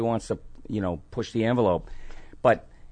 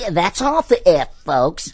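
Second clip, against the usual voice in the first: stuttering, high-pitched and loud; 7 semitones higher, 6 dB louder than usual. Retelling how he would act out America's favorite stuttering pig, in a stuttering Porky Pig voice. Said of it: "America's favorite stuttering pig".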